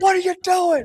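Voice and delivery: mock, very high, shrill yell. Retelling holding the door shut against intruders: retelling own yell. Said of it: "and I'm yelling".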